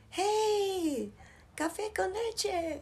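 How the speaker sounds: high, slow mock catcall.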